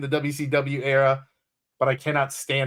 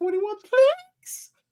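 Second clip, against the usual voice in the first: mock voice crack, much higher pitch. Retelling a clip, imitating Shivani's voice crack. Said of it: "Shivani's voice cracks".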